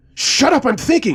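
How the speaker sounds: furious, raging yell, very high and loud. Reading a story where an armed man snaps at a hostage: furious shout. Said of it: "the guy shouted".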